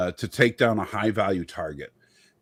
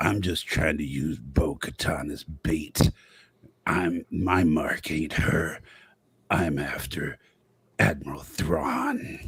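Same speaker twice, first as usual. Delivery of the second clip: put-on robotic voice, slow and drawn out; 5 semitones lower than usual. Retelling a scene in that stupid voice: Cad Bane voice. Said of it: "in that stupid voice of his".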